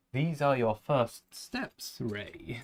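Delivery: sinister evil emperor voice. Trying a quick impression that a listener says turned into Palpatine voice. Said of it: "He turned into Palpatine".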